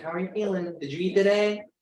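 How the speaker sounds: put-on very high, fussing, doting grandma voice. Describing how they check on people, asking like a grandma. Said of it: "I say it like a grandma".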